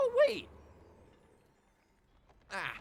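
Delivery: voice cracking, shooting very high and loud. Summoning something that has gone crazy, voice cracking. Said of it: "sorry for the voice crack".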